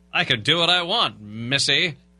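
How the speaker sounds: put-on mid-Atlantic accent. Told off for using the accent, the speaker answers back in a transatlantic accent. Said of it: "You can't use the transatlantic accent".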